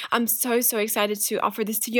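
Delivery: plain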